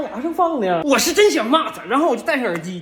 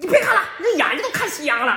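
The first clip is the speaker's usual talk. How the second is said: a woman's voice; 4 semitones higher than usual. Imitating the woman behind telling her child to stop watching: imitating the woman behind. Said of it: "我给你们学一下我后面那女的".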